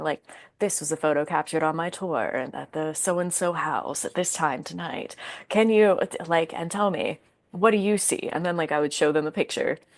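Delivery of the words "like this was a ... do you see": composed, even, cool, calm put-on presenter voice. Recreating the voice used in their short videos, in a put-on cool, calm voice. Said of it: "the cool, calm voice".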